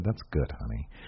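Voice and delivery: mock-condescending tone. Imagining a woman praising his creations, mock-condescending. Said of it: "she very condescendingly said".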